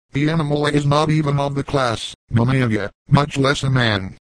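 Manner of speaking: plain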